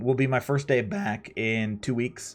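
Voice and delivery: cracking voice. Streamer telling viewers when streams return, voice cracking. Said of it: "My voice cracked right there".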